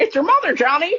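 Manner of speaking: very high talking-bird parrot voice. Doing the movie parrot's accent for the other speaker: parrot voice. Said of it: "He's absolutely nailing the parrot voice".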